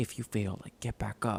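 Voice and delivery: clumsy, bad deep narrator voiceover voice. Describing the voiceover guy from motivational videos, doing a bad motivational voiceover impression. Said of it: "that was a really bad impression".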